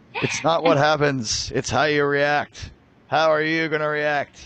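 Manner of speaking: stern, firm football coach pep-talk voice. Talking about how to react, the speaker slips into sounding like a football coach. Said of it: "I sound like my old high school football coach".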